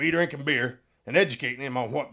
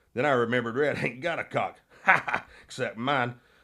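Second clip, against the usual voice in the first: plain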